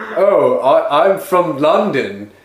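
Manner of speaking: put-on London accent. Retelling what an old schoolmate was overheard saying, in a fake London accent. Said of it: "I hear him saying in his accent".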